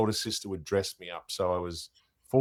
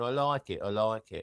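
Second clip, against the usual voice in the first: put-on British accent; 4 dB quieter than usual. Remembering a friend who kept repeating a phrase, the speaker mimics his british accent. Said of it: "he had one of those British accents".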